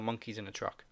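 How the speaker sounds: usual speaking voice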